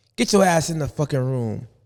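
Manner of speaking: plain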